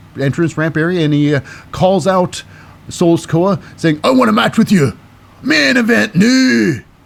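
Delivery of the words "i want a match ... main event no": put-on Scottish-accented voice. Recapping a show, quoting Sheamus calling out Solo Sikoa, in a Scottish accent for Sheamus. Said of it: "I don't know why he's got a Scottish accent".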